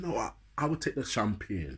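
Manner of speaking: put-on slight Jamaican accent. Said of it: "That's where my Jamaican accent come out a bit".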